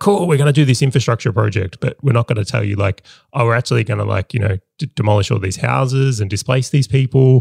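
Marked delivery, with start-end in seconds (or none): none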